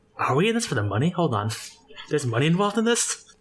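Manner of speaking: hushed whisper in a character voice. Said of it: "Malthus whispers to them".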